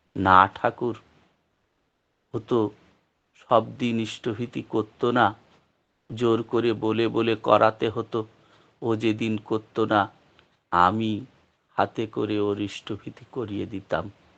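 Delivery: plain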